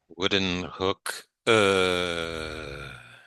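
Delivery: sustained "uh" vowel. Performing a word on the teacher's request: long held "uh" vowel. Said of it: "wooden hook and hold that".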